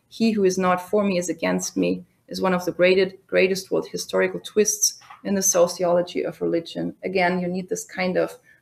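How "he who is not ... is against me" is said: ordinary delivery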